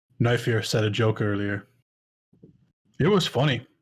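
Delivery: amused, chuckling while talking. Game master voicing a character asked what's so funny, chuckling while talking. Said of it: "chuckling to himself".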